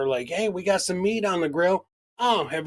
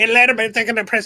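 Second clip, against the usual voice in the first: loud, cranked-up, blurted mocking burst in one go; 5 semitones higher, 8 dB louder than usual. Imitating the other speaker's reading, sped up like fast forward: imitating someone talking very fast. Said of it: "Somebody put you on fast forward?".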